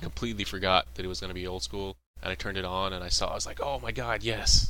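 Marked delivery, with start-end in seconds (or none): 3.6-4.7 acted, very slow, loud, drawn-out, thrilled cry. Retelling turning on the recorded show: retelling an excited cry. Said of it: "I got really excited".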